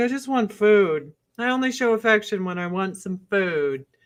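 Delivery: pet cat voice, plainly spoken. Talking to their cat and answering for it, voicing the cat. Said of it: "He's like".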